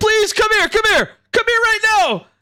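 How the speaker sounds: shrill, very high, urgent shouting.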